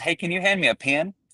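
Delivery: put-on Mississippi accent. A man retells his wife asking him for a pen; imitating wife's Mississippi accent. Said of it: "my wife is um, from Mississippi".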